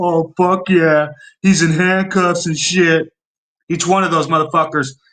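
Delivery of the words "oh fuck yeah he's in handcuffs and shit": slow, smug, self-satisfied gloating tone, acted out. Retelling how the agent walked up: imitating someone smiling smugly. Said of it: "walk up smiling like".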